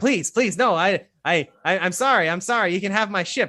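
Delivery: frantic, high, panicked, stammering voice. As guards start to drag him away, a condemned man begs; panicked pleading. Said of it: "he freaks the fuck out".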